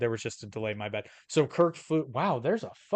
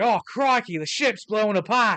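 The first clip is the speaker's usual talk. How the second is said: over-the-top, full-blown Australian accent, pitched up; 9 semitones higher, 7 dB louder than usual. Showing what a full-blown version of his accent would sound like; full-blown australian accent. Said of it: "he's not full blown Australia".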